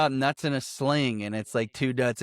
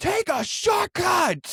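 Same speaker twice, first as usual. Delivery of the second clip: put-on, very high, shrill scream. Retelling a movie scene where a character screams: imitating John Oliver screaming. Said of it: "John Oliver literally screams at him".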